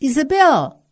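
very loud call, pitched high. A character by an armchair calls out a name, said very loudly. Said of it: "disse muito alto".

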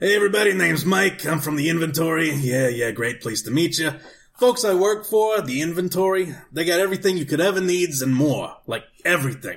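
put-on blue-collar guy voice and accent.

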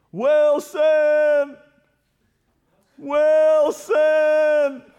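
very high, loud, desperate, anguished shout. Acting out the Castaway moment when the volleyball floats out to sea, imitating Tom Hanks's anguished voice. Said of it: "the man's anguishing voice".

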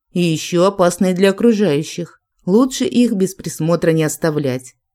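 plain reading voice

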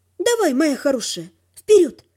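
plain

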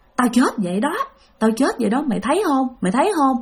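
put-on eerie, ghostly girl's voice. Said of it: "nói với bạn rằng á là".

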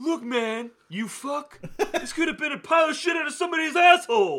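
very high, loud, dim-witted dumb voice. Mocking a man called an idiot, imitating his dumb-sounding voice. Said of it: "the dumbass voice that he has".

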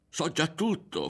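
very high, almost shrieking near-scream. One character pushes back at another who is taunting him with a secret: nearly screaming. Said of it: "fu per urlare Ario".

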